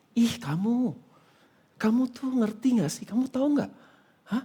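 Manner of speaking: gentle whispering. Retelling what a depiction of the devil says, soft whisper. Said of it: "Dibisik-bisik kan dengan lembut".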